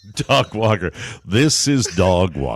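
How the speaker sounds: deep mock announcer voice. Speaker praising the announcer Dog Walker, then doing Dog Walker announcer voice. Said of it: "He's a good announcer".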